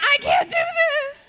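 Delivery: put-on loud, very high panicked cry, slow, drawn-out. Retelling how the brothers reacted after fainting: imitating brothers freaking out. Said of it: "freaking out".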